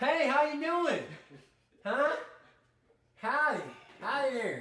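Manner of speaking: exaggerated, very high, swooping hollered yell. Showing the way people seem to want them to talk, an exaggerated yelled greeting. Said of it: "you want me to yell?".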